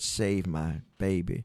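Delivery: faint, feeble, soft voice. Speaker retelling their birth, voicing their hemorrhaging mom, imitating a faint voice. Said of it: "in a faint voice".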